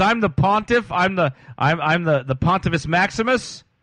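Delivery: slow, derisive, mocking put-on voice. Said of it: "my voice and you say, "You're mocking them," you're right".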